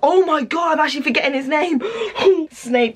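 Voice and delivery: high-pitched, breathless, panicked outburst.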